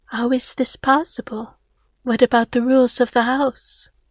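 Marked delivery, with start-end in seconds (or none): none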